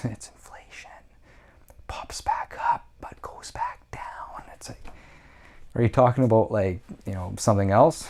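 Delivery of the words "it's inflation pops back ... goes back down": creepy, breathy whisper, breathed out. Mocking how inflation gets described, creepy Joe Biden voice. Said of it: "with a creepy voice".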